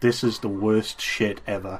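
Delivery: ordinary delivery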